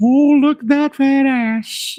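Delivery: slow, high-pitched, drawn-out delivery. Imitating the old man from Family Guy who hits on Chris: Family Guy old man voice. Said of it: "he's all".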